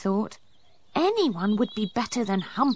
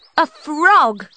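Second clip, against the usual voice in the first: very loud, shrill disgusted cry, frog drawn out; 6 semitones higher, 9 dB louder than usual. Narrator reads Poppy's line as she comes face to face with a frog, cried out. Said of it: "she cried".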